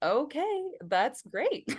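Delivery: easygoing, unbothered, calm, chill, slightly high voice. Retelling what Emma said to the speaker, imitating Emma's chill calm voice. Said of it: "Emma's just always so chill and calm".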